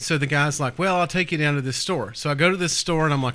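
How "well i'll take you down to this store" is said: usual speaking voice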